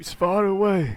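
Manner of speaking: put-on high-pitched, unplaceable, vaguely Eastern European accent. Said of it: "my accent is unplaceable on purpose".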